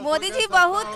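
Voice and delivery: ordinary talk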